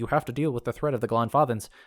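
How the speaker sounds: normal talking voice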